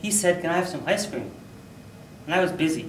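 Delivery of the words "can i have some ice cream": ordinary delivery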